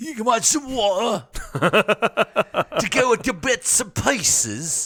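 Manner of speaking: mock London Cockney dialect. Describing cockney people in a game's new release, quote them in a cockney accent. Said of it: "because Cockney".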